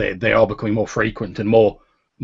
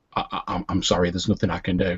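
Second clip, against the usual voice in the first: very softly spoken, gentle, quiet voice; 3 semitones lower, 6 dB quieter than usual. A storyteller voices a character's line in a vision, soft quiet voice. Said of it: "in a very sort of soft and quiet voice".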